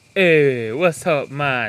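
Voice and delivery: very loud Filipino accent. Asked for the next accent, the speaker greets in a filipino accent.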